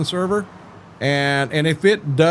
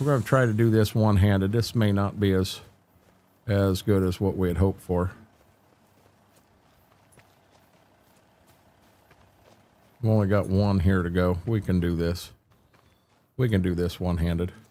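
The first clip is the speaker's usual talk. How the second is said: noticeably lowered, deeper speaking voice; 9 semitones lower, 5 dB quieter than usual. A dad talking to viewers with his daughter on him: a little lower voice. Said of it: "just using a little lower voice".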